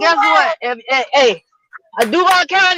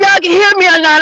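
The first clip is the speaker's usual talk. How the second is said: talking really fast. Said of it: "I'm talking real fast".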